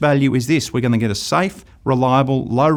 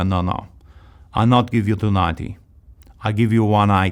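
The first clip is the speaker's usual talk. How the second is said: put-on Italian accent in English; 4 semitones lower than usual. Retelling how customers haggled over the price of a pig, acting out their accent; put-on italian immigrant accent. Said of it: "And I'll do the accent".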